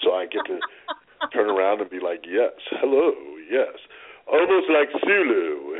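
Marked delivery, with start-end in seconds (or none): 2.3-3.7 deep, sensual, low voice. A show host demonstrates their late-night voice, deep sensual voice. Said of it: "my voice gets a lot deeper and it gets more sensual".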